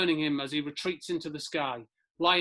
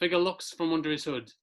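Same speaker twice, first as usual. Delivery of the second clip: plain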